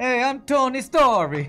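put-on Italian accent. Introducing himself as Tony Story, in a bad Italian accent. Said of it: "This guy with a stupid Italian accent".

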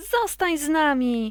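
eager little mouse voice, calling out. The first little mouse calls to the grey sock; calling out. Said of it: "Zawołała pierwsza myszka".

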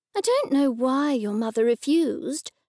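ordinary delivery

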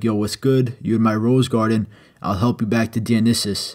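ordinary talk

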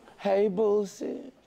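high, smoochy, kissy, lovey-dovey voice. Repeating another speaker's greeting back to her: imitating a kissy greeting. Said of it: "You sound like we was kissing".

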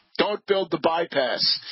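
normal talking voice

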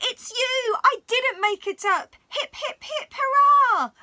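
little, high-pitched squealed cry. Reading a story, the girl sees the little green stranger, squealing. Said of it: "She squealed".

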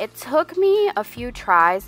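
voice cracking. Explaining a lettering tutorial to viewers, voice cracking. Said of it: "My voice just cracked".

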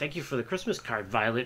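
fast, heavily sarcastic line with put-on politeness. Retelling Charlie Brown's line to Violet, mock-sarcastic Charlie Brown impression. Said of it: "really sarcastically".

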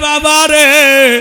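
slow, loud, weeping wail.

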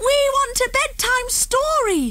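very high, drawn-out shout in unison. Narrating Topsy and Tim bursting out from their hiding place, shouted. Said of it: "they shouted".

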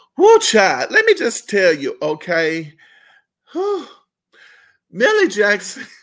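very loud, swooping voice, laughing through the words. Host introducing the r&b diva being discussed, laughing. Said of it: "I'm sorry that I'm laughing".

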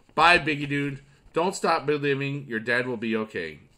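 ordinary delivery

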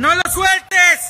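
urgent, slow, drawn-out shouted yell.

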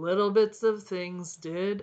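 ordinary delivery, nothing marked

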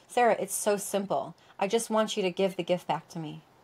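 normal talking voice

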